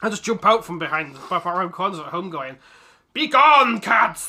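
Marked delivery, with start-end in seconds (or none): 3.1-4.3 very loud, high-pitched, bellowed cartoon-hero battle cry. Retelling jumping out at the cats at home: imitating He-Man. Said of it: "trying to attack them like He-Man".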